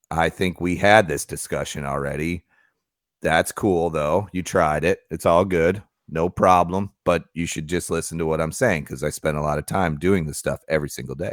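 usual speaking voice

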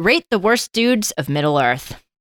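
normal talking voice

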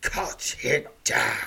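harsh, very loud hissed voice. Narrating a game, voicing the snake men's leader giving an order, hissing. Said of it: "he hisses".

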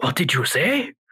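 put-on alien voice. Giving an example of a problematic movie voice: Neimoidian voice from Phantom Menace. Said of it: "the Neimoidian's voice".

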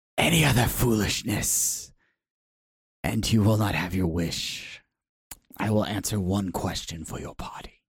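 hissing voice throughout, every word hissed. Voicing Agatha as she answers the party's question, Agatha hissing. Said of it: "She hisses".

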